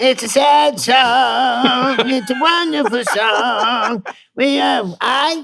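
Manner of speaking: very high, very slow, loud, drawn-out voice. Doing an impression after being asked for other voices: Andre de Shields impression. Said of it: "that's my Andre de Shields".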